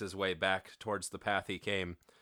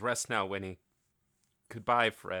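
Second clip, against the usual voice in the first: ordinary delivery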